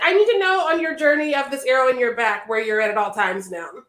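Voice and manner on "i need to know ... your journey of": plain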